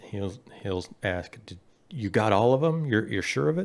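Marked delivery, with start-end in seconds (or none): 1.5-3.7 hushed, quiet delivery. Voicing a character questioning others after an attack: very hushed voice. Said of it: "in a very hushed voice".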